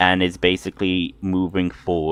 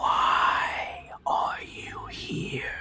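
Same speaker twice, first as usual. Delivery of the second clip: whispered, very slow and drawn out. Narrating for a player, voice the familiar whisper that speaks again, whispering. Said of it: "you do hear the familiar whisper again".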